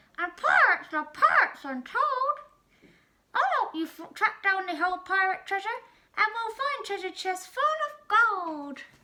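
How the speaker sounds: high, loud, squawky cartoon parrot voice. A noisy parrot perches on the would-be pirate's head and offers help, squawking. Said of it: "it squawked".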